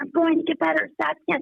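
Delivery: mock shouting. Retelling a near-death vision, holding a hand: imitating someone shouting. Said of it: "I started shouting at the top of my lungs".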